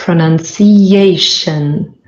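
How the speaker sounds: slow pronunciation with main stress on A. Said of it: "The main stress is on A".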